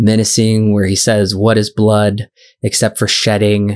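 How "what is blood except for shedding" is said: ordinary delivery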